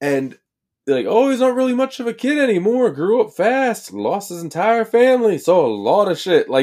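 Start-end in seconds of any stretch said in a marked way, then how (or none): 1.1-6.5 put-on Southern American accent, pitched up. Recapping a scene, voicing Moriarty doing a Southern accent. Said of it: "I can do Moriarty doing Southern".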